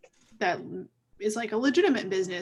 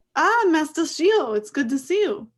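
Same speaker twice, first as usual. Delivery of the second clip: put-on French accent, pitched up; 7 semitones higher, 5 dB louder than usual. Voicing a shopkeeper who greets a Jedi visitor: French accent. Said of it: "Oh, French accents".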